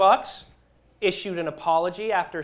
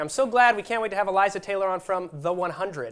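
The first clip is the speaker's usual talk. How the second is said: ordinary delivery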